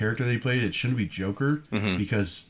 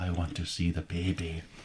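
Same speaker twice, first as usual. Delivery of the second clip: put-on German accent, quieter; 3 semitones lower, 5 dB quieter than usual. Doing an impression offered to the others: Werner Herzog impression. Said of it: "I could do Werner".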